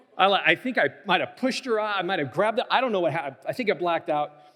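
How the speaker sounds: ordinary talk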